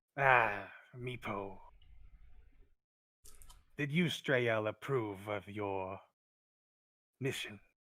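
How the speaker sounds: easing up a little, slightly gentler delivery. A game master voices a kobold addressing Meepo, softening a little. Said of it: "kind of softens a little bit".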